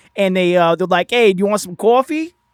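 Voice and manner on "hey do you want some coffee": loud, higher goblin voice with Brooklyn accent. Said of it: "they all talk like this".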